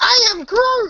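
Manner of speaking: very high, squeaky, helium-like voice. Showing how Groot might sound with a lighter voice: lighter Groot voice, like on helium. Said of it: "make Vin Diesel's voice, like, lighter".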